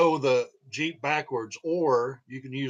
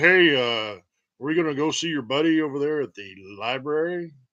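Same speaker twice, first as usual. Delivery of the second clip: mock rolling, rumbling voice; 4 dB louder than usual. Speaker imitates a man they say they hate, in a rolling, rumbling voice. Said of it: "one of those voice that just rolls and rumbles".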